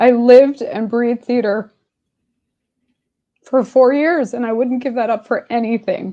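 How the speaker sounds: choked-up, emotional voice catching. An interview guest answers the host, choked up. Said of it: "I'm getting choked up".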